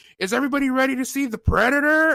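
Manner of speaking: high, hyped emcee announcer call revving up crowd. Retelling a movie night, the speaker quotes the commentator at the front: imitating the commentator. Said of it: "the commentator, ... he goes".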